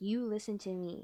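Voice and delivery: mock angry character voice. Retelling how a character snaps at the group leader: imitating an angry character. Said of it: "And he gets so mad".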